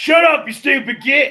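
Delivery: shrill, very high, loud shouting. Narrating the scene, voicing Griswold answering Valor, Griswold yelling back. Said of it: "Griswold yells back".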